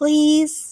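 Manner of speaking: mock pleading tone, as sweet as possible, high. Narrator asks Mom again to go trick-or-treating, in sweet pleading. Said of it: "I asked as sweetly as I could".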